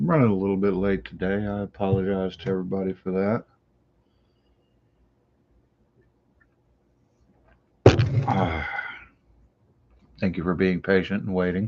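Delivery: hushed, quiet, voice kept down. Host of a morning live show, keeping Missus Early Nerd asleep: talking quietly. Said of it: "I'm talking quietly".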